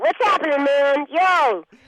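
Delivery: sudden snap into a cartoon kid voice. Showing her famous character voice after her normal voice: Bart Simpson voice. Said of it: "here's Bart Simpson".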